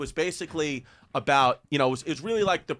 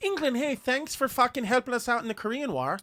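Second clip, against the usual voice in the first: fake, very high Irish accent; 10 semitones higher than usual. Joking to the show's listeners in England, put-on Irish accent. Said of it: "that's an Irish accent".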